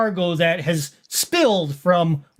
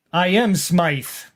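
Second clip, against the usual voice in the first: put-on accent close to German but not quite. Voicing a suited gentleman questioning a player: not quite a german accent. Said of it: "not quite a German accent".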